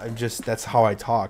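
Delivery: normal talking voice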